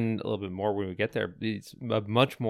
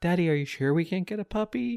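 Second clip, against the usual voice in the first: put-on very high little girl voice, pleading; 9 semitones higher than usual. Recalling voices overheard while running around town in a game, little girl's voice. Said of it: "this little girl's voice".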